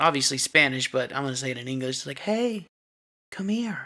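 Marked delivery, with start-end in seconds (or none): 2.2-3.9 high woman's voice, calling out, beckoning. Retelling a creature calling out in the night: imitating a woman's voice calling. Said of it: "Like a woman's voice".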